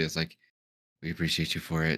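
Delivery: very quiet, hushed, barely above a murmur. Voicing Drift, who speaks to a snake very quietly. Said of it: "Drift would just say very quietly".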